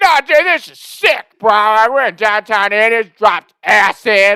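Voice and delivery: hyped-up, carried-away shouting. Recounting tripping on acid in a crowded bar while being shushed, retelling excited yelling. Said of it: "I'm like yelling and shit".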